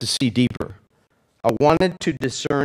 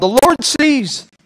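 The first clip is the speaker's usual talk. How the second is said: mock, very high, loud shouted call; 11 semitones higher, 5 dB louder than usual. Retelling calling back to a friend while driving: retelling own yell. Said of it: "and I yell".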